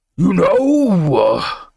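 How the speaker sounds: high, booming demon bellow with know stretched out. Reading a story aloud, voicing a demon: bellowing demon voice. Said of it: "bellowed the demon with a throaty laugh".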